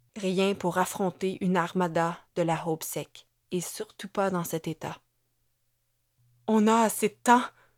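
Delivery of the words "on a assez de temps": fearful, afraid, louder. Asking his companion a question while fearing the answer; fearful. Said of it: "craignant la réponse".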